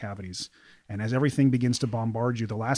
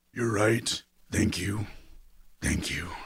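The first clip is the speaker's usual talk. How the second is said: put-on strangled, choked wheezing; 2 semitones lower than usual. Narrator voicing a bearded man being choked, wheezing out his words: wheezing. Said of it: "wheezes out the bearded man".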